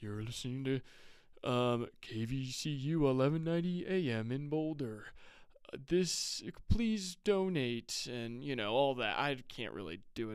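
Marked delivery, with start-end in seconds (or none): 0.0-8.1 mock radio announcer voice, put-on, slower pace. Imitating how radio station hosts talk on air, in a radio announcer voice. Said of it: "these guys got these radio voices".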